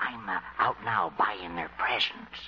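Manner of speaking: low, soft whisper. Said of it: "What are you whispering about".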